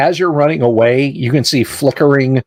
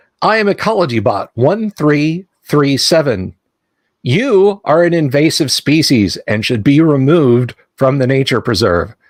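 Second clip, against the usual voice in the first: mechanical, machine-like robot voice. A robot at the nature preserve's edge answers Bogo: Ecology Bot mechanical voice. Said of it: "this mechanical voice comes out and says".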